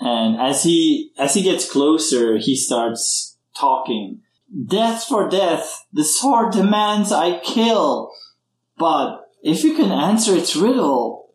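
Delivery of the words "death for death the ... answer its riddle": mournful and gleeful at once, unhinged madman voice. Narrating a game, Captain Brosh draws closer and starts talking: sad-yet-happy crazy voice. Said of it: "his voice sounds sad, but also happy at the same time, like a crazy man's voice".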